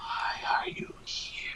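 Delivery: barely audible, soft, breathy whisper. Game master voicing a mysterious voice that only Fawn hears, whispering. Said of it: "it sounds like just a just kind of a, a whisper".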